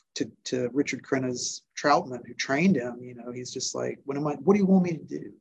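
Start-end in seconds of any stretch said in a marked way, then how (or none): 4.1-5.2 put-on breaking-down voice, acted out. Describing a character's speech to the man who trained him, imitating someone breaking down. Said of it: "when he breaks down in that speech".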